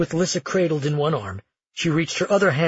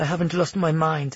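ordinary delivery, nothing marked

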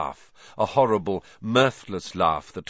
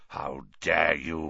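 low, deep, rough growl; 4 semitones lower, 4 dB quieter than usual. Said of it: "he growled, suddenly sounding like the bear-sized dog".

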